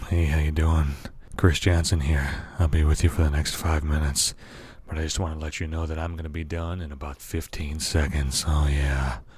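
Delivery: very low, sultry phone sex voice. Introducing himself to listeners in his phone sex voice. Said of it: "Phone Sex Voice Chris Jansen".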